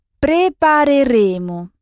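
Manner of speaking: Prépareremo, stress on the penultimate syllable re. Pronunciation lesson on word stress, stress on penultimate re in prepareremo. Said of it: "on n'insiste pas sur le dernier o, mais sur le e qui précède".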